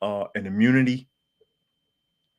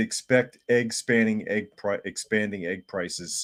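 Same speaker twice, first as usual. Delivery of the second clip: usual speaking voice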